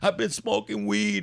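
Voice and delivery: put-on tearful voice. Retelling a son's apology in the car: imitating crying. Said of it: "He starts crying".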